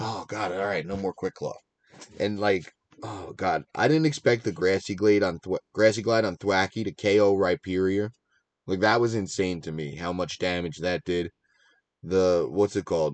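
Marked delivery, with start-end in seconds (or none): 0.0-1.5 voice full of sudden relief. Retelling a player's reaction once the Quick Claw is knocked off: imitating Smurf's relief. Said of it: "the relief saying".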